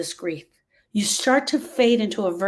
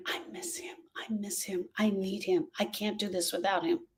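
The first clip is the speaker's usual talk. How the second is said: put-on whispering, quieter; 11 dB quieter than usual.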